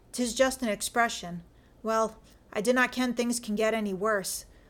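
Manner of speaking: ordinary delivery, nothing marked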